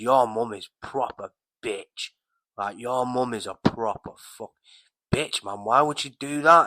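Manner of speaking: mock nasty, spiteful, malicious tone. Retelling a friend's insult about his mum while smoking together: imitating a friend's malicious tone. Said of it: "he said it with malice".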